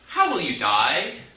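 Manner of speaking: ordinary talk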